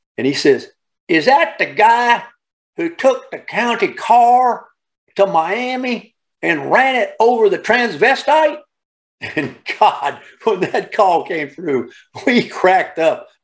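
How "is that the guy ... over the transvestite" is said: put-on pitched-up old country voice. Retelling the question from a caller who heard us talking about it, imitating an old country boy. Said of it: "I'm going to imitate him for you".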